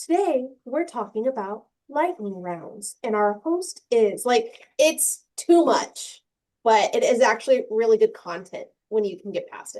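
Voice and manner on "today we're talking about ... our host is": mechanical, robotic transatlantic announcer tone. Imitating a podcast host who sounds like ai: robotic newscaster voice. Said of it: "her voice is so robotic".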